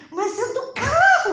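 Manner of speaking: high, loud, shocked, laughing disbelief.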